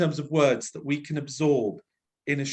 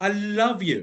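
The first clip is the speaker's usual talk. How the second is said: grand, full-energy, pitched-up declaration; 5 semitones higher, 3 dB louder than usual. Giving a note on the final line, showing a big, bigger delivery. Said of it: "I would have made it bigger because it's the final statement".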